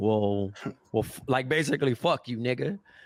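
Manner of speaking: plain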